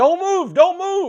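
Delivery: very loud, shrill, high-pitched, top-of-the-lungs scream. Retelling a cop standing over him after an explosion, imitate the cop's scream. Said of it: "he is screaming at the top of his lungs".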